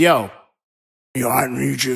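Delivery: low, slow, drawn-out, unhurried voice. Speaker acts out a powerful man asking a favor: Mister Carr impression. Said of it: "this is how he sounds".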